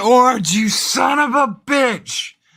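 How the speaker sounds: very high, loud hollered yell. Retelling calling out from a passing car: retelling own yell out a window. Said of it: "I yell out the window".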